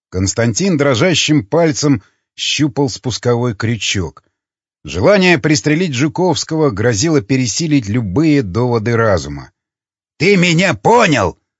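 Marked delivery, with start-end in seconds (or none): 10.1-11.3 insistent, pressing, raised voice pitched up. Zhukovsky speaks to a man with his finger on the trigger, raising his voice. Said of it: "повысил голос Жуковский".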